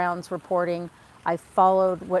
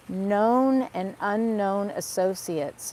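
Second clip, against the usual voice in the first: each word drawn out very slowly, deliberate emphasis; 2 semitones higher than usual. Discussing the Epstein case, repeating a phrase really slowly. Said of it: "let me say that really slowly".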